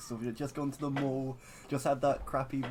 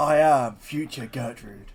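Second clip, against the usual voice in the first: very loud, rough, gruff, booming voice; 10 dB louder than usual. Introducing a future version of a character in a group bit; gruff Future Gertrude voice. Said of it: "in a gruff voice".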